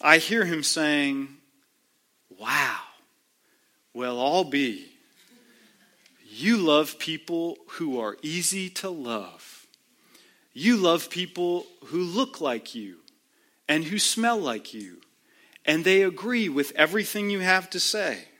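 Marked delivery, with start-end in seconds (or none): 2.4-18.2 put-on sarcastic voice. Imagining Jesus asking a rhetorical question: sarcastic Jesus voice. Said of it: "catching the sarcasm in Jesus' voice".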